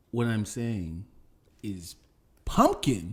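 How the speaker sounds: slow, patronizing, condescending, spelled out word by word. Arguing about pies with another speaker: condescending tone. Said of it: "Why'd you say it like that? Like, listen, dummy".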